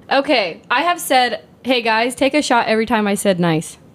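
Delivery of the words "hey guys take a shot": usual speaking voice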